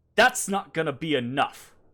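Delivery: speaking up loudly. Voicing a character who challenges a player out loud: character saying it loudly. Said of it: "she says it loudly".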